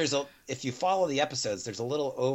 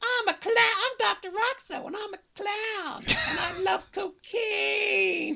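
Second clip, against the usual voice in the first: very high, very slow drawl, cocaine stretched. Describing a cartoon metal band's doctor character: imitating Doctor Roxo. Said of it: "he's like".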